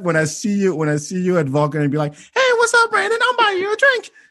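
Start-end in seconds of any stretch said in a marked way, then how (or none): 2.1-4.1 showy voice pushed very high. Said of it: "with that fucking voice".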